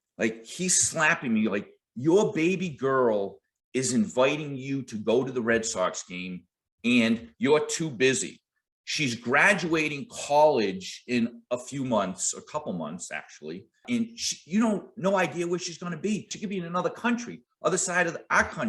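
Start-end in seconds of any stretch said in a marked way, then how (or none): none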